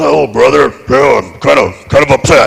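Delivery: rough, creaky, raspy put-on voice. Retelling what a wrestler said about being upset: bad Hulk Hogan impression. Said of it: "I don't do a very good Hulk".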